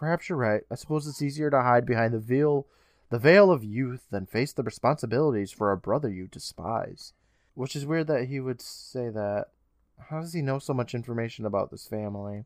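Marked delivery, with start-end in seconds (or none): none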